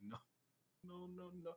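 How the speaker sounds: hushed, breathless pleading tone, barely voiced, breathed out.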